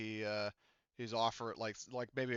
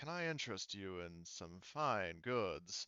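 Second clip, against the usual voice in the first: soft, slow, hushed hag voice; 3 semitones lower, 6 dB quieter than usual. The narrator voices a figure beckoning the travelers closer, Argonian voice, like a hag. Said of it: "he sounds like a hag".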